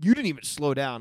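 condescending, patronizing talking-down tone. Retelling what a man said to him, the speaker mimics him, mock-condescending. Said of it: "the way he said it felt very condescending".

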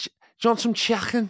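fake Liverpool accent. Asked whether they can do Scouse, trying it out: Scouse accent. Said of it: "Can you do Scouse?".

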